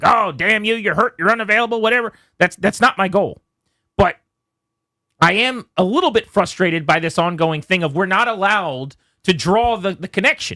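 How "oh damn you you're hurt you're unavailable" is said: put-on angry, ranting radio host voice. Talking about an injured player, imitating an angry radio guy. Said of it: "like angry radio guy".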